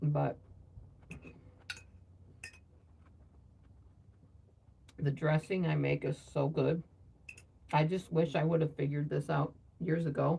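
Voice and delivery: talking with mouth full while eating. Eating and talking about a homemade dressing, talking with mouth full. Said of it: "talk too much with my mouth full".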